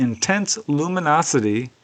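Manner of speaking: ordinary talk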